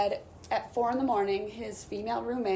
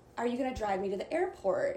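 ordinary talk

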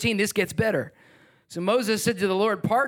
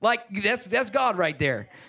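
normal talking voice

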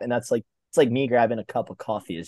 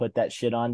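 ordinary talk

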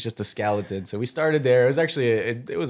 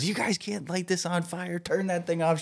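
mock woman's yell, higher pitch; 7 semitones higher, 5 dB quieter than usual. Retelling how a lady put out their fire: imitating her yelling. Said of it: "She's yelling at us".

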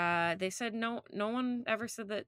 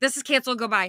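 put-on panicked voice, louder; 3 semitones higher, 10 dB louder than usual. Retelling how a character cancels the picnic: imitating a panicked character. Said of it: "in panic mode".

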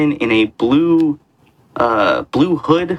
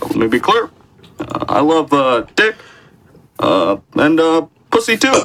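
halting, pitched-up delivery lingering on every uh; 5 semitones higher than usual. Doing a requested joke line as Barack Obama: Barack Obama impression. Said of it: "Can you do the bisexual Obama".

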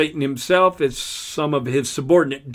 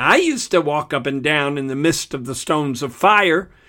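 ordinary delivery

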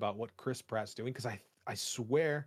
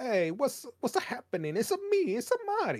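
cartoonish Italian accent, much higher, slower; 12 semitones higher, 4 dB louder than usual. Imagining how he will talk at the movie's start: Mario voice. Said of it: "he's going to be talking like that".

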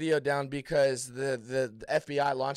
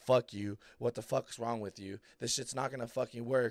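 mock, put-on upset freaking-out outburst; 2 semitones lower, 4 dB quieter than usual. Retelling a man's reaction after a card was shown to millions live, imitating someone freaking out.

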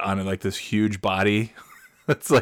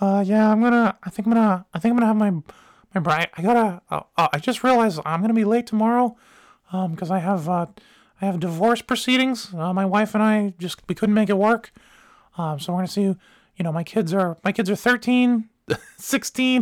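put-on childlike voice, unbroken, much higher; 11 semitones higher than usual. Retelling a big dude's words in his unbroken kid voice. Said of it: "everything else had gotten into adult status except the voice".

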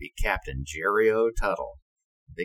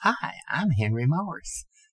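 very effeminate-sounding high voice; 7 semitones higher than usual. Recalling a Navy handshake, act out the man's introduction, imitating Henry Morris's very effeminate voice. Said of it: "he had a very effeminate sounding voice".

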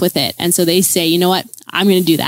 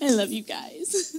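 hushed, very soft, choked-up, on the verge of tears; 8 semitones higher, 12 dB quieter than usual. Honoring the pastors after asking them to stand, close to tears. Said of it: "I'm gonna cry".

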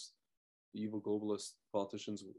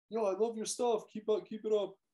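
loud, shrill, high-pitched shout, pitched way up; 12 semitones higher, 7 dB louder than usual. Retelling a driver calling out from his Jeep: imitating someone screaming. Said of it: "He's screaming out".

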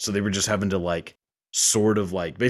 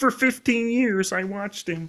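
very high-pitched frog puppet voice; 14 semitones higher than usual. Showing others an impersonation when the talk turns to the Muppets, spot-on Kermit impression. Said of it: "That's a really spot on impression".

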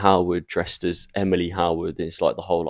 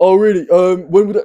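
high, loud, thick fake Cockney accent. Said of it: "I've got to do a Cockney accent".

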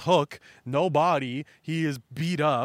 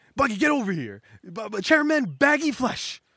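high, swooping yell with a stumbling restart; 7 semitones higher, 3 dB louder than usual. Retelling a comic scene where someone calls buggy over: imitating someone yelling. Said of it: "somebody's yelling".

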